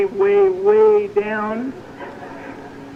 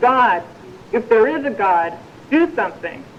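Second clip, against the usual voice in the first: ordinary delivery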